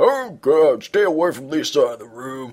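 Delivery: retching through words. [name] calls to Nick as he tries to move through the room, gagging. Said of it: "gagging as he tries to progress".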